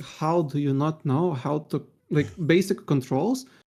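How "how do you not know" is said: ordinary delivery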